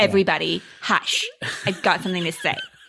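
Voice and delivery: camp, put-on sheriff voice. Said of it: "He's very camp".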